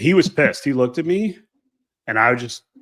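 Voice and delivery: ordinary talk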